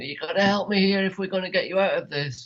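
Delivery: mild, half-voiced, toned-down yell. Retelling what she screamed while unable to move them: imitating someone screaming. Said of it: "I remember her screaming at me".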